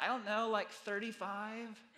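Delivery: put-on young teenage girl voice. Quoting a teenager's answer to a question, in a junior high girl voice. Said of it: "the only time you're ever going to hear my junior high girl voice".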